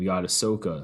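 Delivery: ordinary delivery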